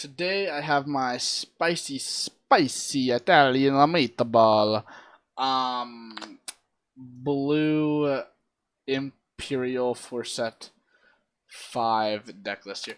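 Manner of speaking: very slow, hesitant, drawn-out groping for words. Naming a deck while unsure what to call it: said really slowly. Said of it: "I said that really slow".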